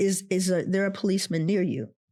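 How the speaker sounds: ordinary talk, nothing marked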